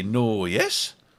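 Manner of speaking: imitated Welsh speech. Mimicking how the Welsh always answer: imitating the Welsh. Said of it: "The Welsh always say".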